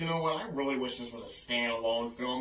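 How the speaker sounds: plain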